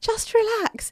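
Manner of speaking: very high, coaxing whisper. Retelling a struggle in a small loo: retelling own whisper.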